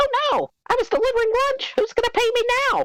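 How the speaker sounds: shrill, loud bellow rising high. Narrator voicing Kashek, who has just dropped the food he carried, high shrill bellow. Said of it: "bellows in a high, shrill voice".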